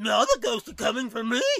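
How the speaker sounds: put-on cartoon character voice. Retelling how the commentary sounded, imitating Scooby-Doo without the R accent. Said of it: "He was just like".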